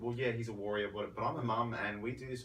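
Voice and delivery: normal talking voice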